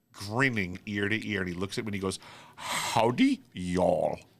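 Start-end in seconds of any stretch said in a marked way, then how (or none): 2.6-4.2 loud, swooping, crazy put-on Indian accent. Act out a beaming man dressed like a rhinestone cowboy greeting you, in a crazy Indian accent. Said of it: "he had the crazy Indian accent".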